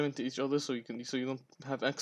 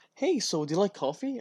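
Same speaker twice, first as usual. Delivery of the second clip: overjoyed, chipper, friendly voice, high and raised; 6 semitones higher, 6 dB louder than usual. Retelling what a man they work with said to them, imitating a really happy tone. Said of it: "really happy tone".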